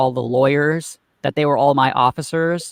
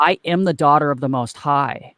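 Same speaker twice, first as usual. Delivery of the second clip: ordinary talk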